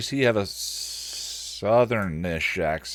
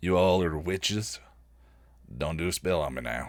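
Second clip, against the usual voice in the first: put-on strange backwoods man's voice; 4 semitones lower, 6 dB quieter than usual. Voicing a strange man who butts into the conversation: voice like someone from Deliverance. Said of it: "he sounded like, uh, he's from Deliverance".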